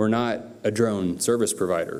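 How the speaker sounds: firm, emphatic delivery with a falling end. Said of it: "I can say emphatically".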